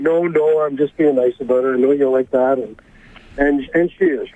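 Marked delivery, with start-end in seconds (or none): none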